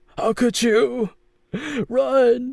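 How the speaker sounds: very high, slow, drawn-out pained wailing cry. Voicing Attica clutching his dislocated arm and fleeing: Attica's pained cry. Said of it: "He was like".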